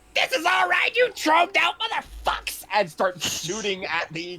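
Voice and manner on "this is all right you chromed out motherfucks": very high, shrill yell in a character voice. Declaring a character's action in a shootout: yelling in character. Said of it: "pop their head out and yell".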